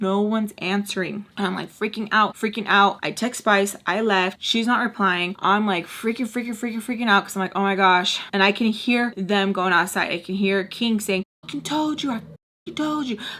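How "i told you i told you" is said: repeated mock full-on high-pitched screaming. Telling a story, repeating what someone outside kept yelling: retelling a scream. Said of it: "like just screaming".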